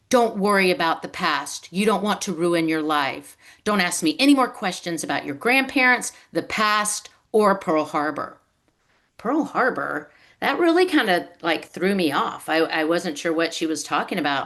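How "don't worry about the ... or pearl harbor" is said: put-on thick German accent, laid on. Retelling a woman telling the speaker to stop asking questions: thick German accent. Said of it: "in a thick German accent".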